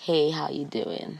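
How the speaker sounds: very slow, low, soft fake seductive murmur. Acting out a pickup with the other speaker, put-on sexy voice. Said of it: "the sexy voice".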